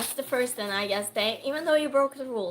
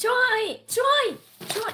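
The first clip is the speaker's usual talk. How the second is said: loud yelling, pitched way up high; 12 semitones higher, 6 dB louder than usual. Speaker calls out to someone they have something for: yelling. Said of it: "Oh my gosh, I'm yelling".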